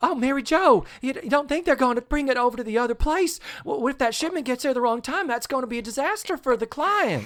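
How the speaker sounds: high, dim-sounding sitcom voice. Imitating how Jean Smart always talked in Designing Women: Jean Smart's Designing Women voice. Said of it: "she always was just kinda talking like this".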